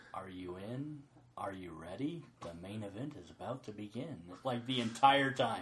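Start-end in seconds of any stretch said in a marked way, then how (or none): 0.1-4.2 very quiet, low, hushed, eerie and weird voice. Describing a ride, imitating the voice that plays the entire time: weird creepy voice. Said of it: "this weird, creepy voice going".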